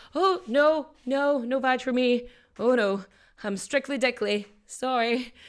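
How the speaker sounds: nervous, flustered, slow, panicked backpedaling. Retelling an actress turning down an advance: imitating Joan Crawford panicking. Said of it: "that she just panicked".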